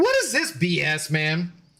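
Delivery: irritated, annoyed, drawn-out, swooping complaint. Retelling getting edibles with only ten milligrams per pack, retelling being pissed off. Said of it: "I was so pissed".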